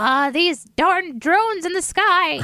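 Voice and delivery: put-on cranky old person voice, drawn out. Joking about drones in the sky: put-on old person voice. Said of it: "I feel like an old person too. I'm like".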